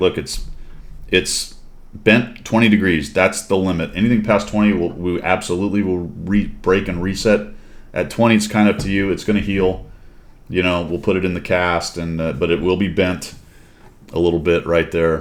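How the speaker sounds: ordinary delivery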